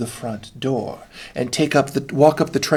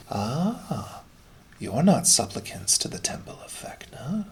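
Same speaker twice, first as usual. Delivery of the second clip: spooky, hushed half-whisper; 6 dB quieter than usual. Narrator voicing a voice the players hear from the darkness, half-whispering voice from the darkness. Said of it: "You hear a voice like a whisper come from the darkness".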